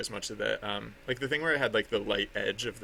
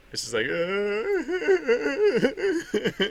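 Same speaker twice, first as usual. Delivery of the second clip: high, slow, exaggerated mock sobbing. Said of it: "that was my impression of me watching it".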